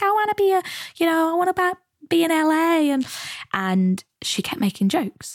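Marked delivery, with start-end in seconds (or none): 0.0-2.9 high-pitched woman's voice, wannabe tone. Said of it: "this woman was like".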